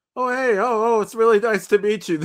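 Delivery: high, friendly, sugary-sweet, pleasant tone. Retelling a film scene where a character is being all pleasant. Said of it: "where he's being all pleasant".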